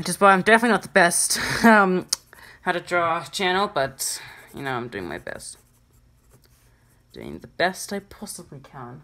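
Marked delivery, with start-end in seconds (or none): 7.1-9.0 put-on, soft, sing-song British accent. Drawing tutorial narrator remarking on own effort, in a put-on british accent. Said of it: "Don't know why I said that in a British accent".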